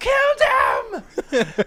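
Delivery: mock very high, shrill, wild, swooping shriek. Voicing a character in the game who attacks: screaming. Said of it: "he screams and goes".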